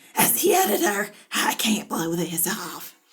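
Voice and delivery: pleading through a raw, rasping, sore throat. Reading a story aloud, redoing Kate's begging line in her rasping sore-throat voice. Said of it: "Kate begs me in her rasping, sore throat, throat voice".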